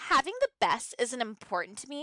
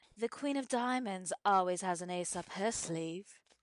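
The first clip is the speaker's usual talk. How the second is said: put-on British accent; 5 semitones lower, 5 dB quieter than usual. Quoting a line after practicing accents, asking if she nailed it: LVP British accent impression. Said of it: "and then LVP. ... Did I nail it?".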